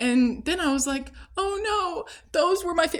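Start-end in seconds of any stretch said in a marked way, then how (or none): 1.4-3.0 acted, high, tearful crying voice, breaking off. Retelling own past words to another speaker: retelling own words while crying. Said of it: "I was in tears, like, crying".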